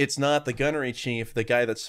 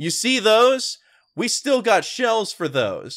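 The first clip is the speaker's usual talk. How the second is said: put-on loud, slow, condescending, patronizing delivery; 10 semitones higher, 6 dB louder than usual. Retelling a movie character's line to the old gunnery chief: imitating a patronizing tone. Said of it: "in a, such a patronizing way and says".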